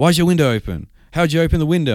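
very high, loud, almost yelling. Retelling being questioned at the door about an open window, almost yelling. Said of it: "they're almost like yelling at me like".

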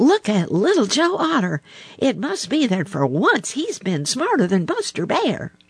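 eager, excited, very high, swooping cry. A character cries out to the others to look at a newcomer; crying out excitedly. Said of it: "cried Billy Mink".

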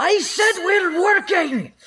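booming, very high, very slow drawn-out yell. Granlin shouting at everybody before shuffling them into the back room, Granlin's booming yell. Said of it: "yells at everybody in her booming Granlin voice".

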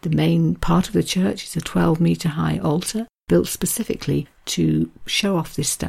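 plain reading voice

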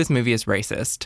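usual speaking voice

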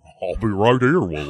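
TV sitcom talking-horse voice. Playing a horse answering William in a comic bit: Mr. Ed horse voice. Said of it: "That's such a better horse voice".

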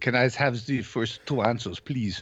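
put-on German accent. Asking the quizmaster for the first two answers, fake German accent. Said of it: "I'm enjoying the German accent".

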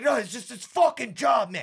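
mad complaining. Retelling what an angry coworker said about the job: imitating a mad coworker. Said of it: "He's all fucking mad and shit".

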